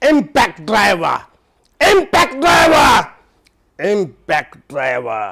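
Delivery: very loud, furious, swooping angry shout. Repeating the keyword three times in a replayed clip: angry shout. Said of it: "you have to shout it".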